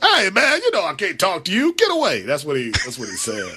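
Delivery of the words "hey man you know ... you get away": high voice swooping and swinging around in pitch. Redoing the Magic Johnson impression on request once more. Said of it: "It's a good Magic Johnson".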